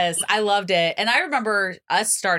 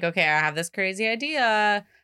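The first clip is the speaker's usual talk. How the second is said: normal talking voice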